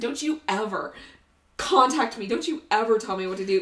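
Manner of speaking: put-on furious, angry ranting outburst. Retelling a confrontation with a lady, imitating own angry outburst. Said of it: "I went off on this lady so bad".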